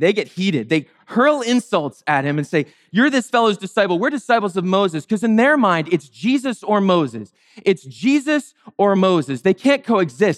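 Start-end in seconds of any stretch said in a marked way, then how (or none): none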